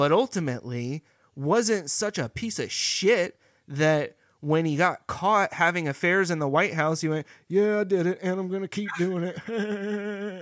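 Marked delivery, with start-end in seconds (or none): 7.5-10.4 bad high voice with the word "it" drawn out. Imitating a president caught having affairs: terrible Bill Clinton impression. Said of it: "that was a terrible Bill Clinton impression".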